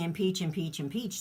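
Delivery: ordinary talk, nothing marked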